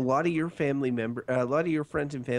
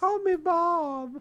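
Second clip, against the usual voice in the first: very high voice stretching one name out long. Imitating a mother telling people to use her first name: imitating Barb. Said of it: "That's a good impression".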